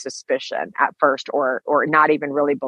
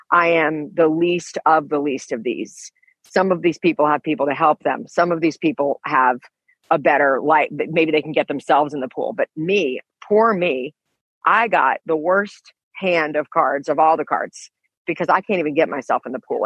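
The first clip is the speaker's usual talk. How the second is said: plain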